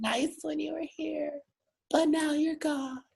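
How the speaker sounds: mocking sensitive voice. Mocking the way the lyrics gently tell someone they're gone: mocking sensitive voice. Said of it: "in their little sensitive way".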